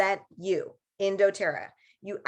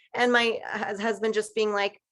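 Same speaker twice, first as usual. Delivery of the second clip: ordinary talk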